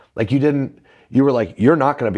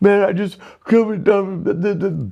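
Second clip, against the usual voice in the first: put-on tearful crying babble, higher pitch; 9 semitones higher than usual. Retelling crying in the backyard while drunk: imitating own crying babbling. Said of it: "and I'm crying, going".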